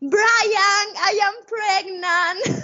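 acted, very high, shrieking scream. Retelling being put on his shoulders and what she cried out, retelling a scream. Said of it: "I started screaming".

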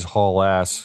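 plain

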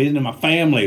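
Southern US accent. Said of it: "the southern accent came out".

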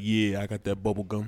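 smooth, low, suave cool-guy voice. Retelling what the guy in the car answered, in a suave voice. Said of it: "You get the suave voice".

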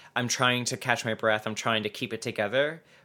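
plain

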